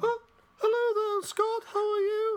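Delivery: put-on falsetto character voice throughout. Bringing in a reporter character to read the news: falsetto voice as Sid. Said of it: "what's with the falsetto".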